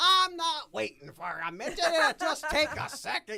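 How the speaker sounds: put-on angry yell, drawn-out, very high holler. Retelling how Lou yelled at Mickey to come meet fans: imitating Lou yelling. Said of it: "yelling at Mickey".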